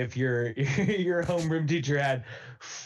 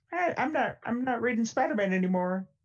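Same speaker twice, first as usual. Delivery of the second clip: put-on younger teenage voice, much higher pitched; 9 semitones higher than usual. Recalling tenth grade, the speaker mimics their own 14-year-old self. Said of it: "was that Kermit the Frog?".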